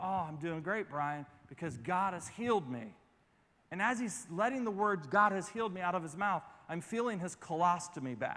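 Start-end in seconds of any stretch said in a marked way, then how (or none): 0.0-2.9 hushed, soft, confiding, intimate half-whisper. Retelling what a man half-whispered into his ear at a convention, retelling a half-whisper. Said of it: "he whispers into my ear".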